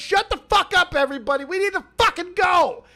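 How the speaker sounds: put-on impatient, fed-up, own accent dropped. Retelling what Smaggley said in the clip: imitating Smaggley, accent dropped. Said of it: "Drop the accent and everything".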